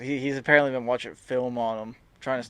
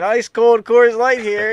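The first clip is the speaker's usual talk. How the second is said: put-on vendor scream, much higher and louder; 11 semitones higher, 14 dB louder than usual. Retelling a game story, the speaker acts out the Coors Light vendor: imitating a vendor screaming. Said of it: "He's screaming".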